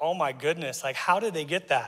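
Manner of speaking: ordinary delivery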